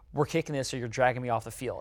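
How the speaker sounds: normal talking voice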